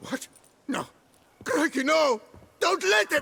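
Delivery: very high, shrill, loud terrified screams. A captive about to be used as live bait, screaming in terror. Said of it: "Stop screaming".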